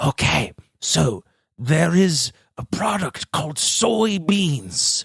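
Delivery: whispering breathily, airy and soft. Telling a listener a secret, in a breathy whisper. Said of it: "Can you whisper a little less breathily".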